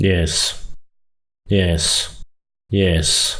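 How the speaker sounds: each yes dropping low with falling tune. Showing learners one of nine ways to say yes: low falling intonation. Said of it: "the low fall".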